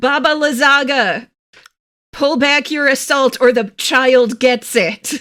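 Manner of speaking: loud, high-pitched shouting in a character voice. Playing a character threatening a witch to stop her attack: yelling a threat in character. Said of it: "I'm going to yell".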